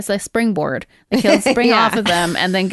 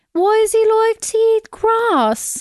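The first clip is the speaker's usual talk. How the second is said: put-on British child voice, higher; 14 semitones higher than usual. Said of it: "so it's double British accent".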